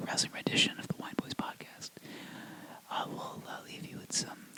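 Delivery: hushed, soft, breathy whisper. Closing out the podcast episode, thanking listeners: whispering. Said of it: "Why are you whispering?".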